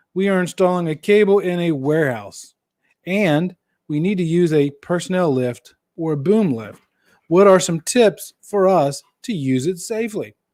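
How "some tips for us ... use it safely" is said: normal talking voice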